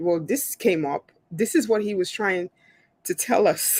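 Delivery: plain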